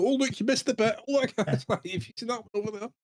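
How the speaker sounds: smug gloating. A game player acts out their character speaking to the other players, smug. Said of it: "As I smugly going".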